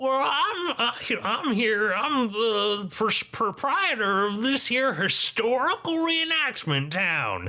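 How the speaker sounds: put-on very high, gnarled old gnome voice. Voicing a gnarled gnome man greeting travelers at a gate: gnarled gnome man voice. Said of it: "gnome man".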